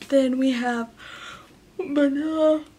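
tired, speaking through a yawn. Showing sodas to viewers while tired, yawning. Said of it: "I'm so sorry for my yawns".

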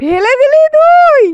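high, loud mock outrage in fake shock.

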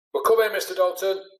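loud roaring call, very high pitch. A boy answers the man who ordered the group inside, roaring back. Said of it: "Steve roared back".

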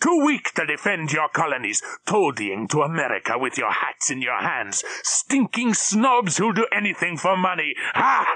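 scornful shouting. Narrator reading a man shouting at people across a desk: shouting. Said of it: "My real name is [name]. The wounded and mutilated man the stupid Allies brought to the British field hospital was indeed a German officer".

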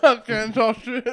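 talking through a full mouth. Speaker on a podcast eating almonds, talking with mouth full. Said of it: "Mouth full of nuts".

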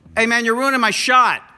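fake shouting. Joking at someone who is ruining the shot: mock yelling. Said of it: "Stop yelling at me".

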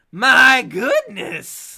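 screechy, high, very loud witch-like hag croak. Game master voicing a hag who eyes the group, croaking hag voice. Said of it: "the hag croaks".

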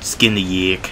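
heavy put-on New Jersey accent, said softly. Testing something out on a yak, the speaker talks in a thick Jersey accent. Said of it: "Got that really thick Jersey accent".

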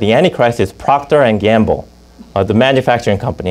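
ordinary talk

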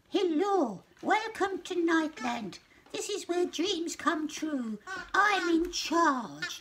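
squeaky little man voice, very high. Reading a story aloud, voicing the little man's greeting in a squeaky voice. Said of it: "he spoke in a squeaky voice".

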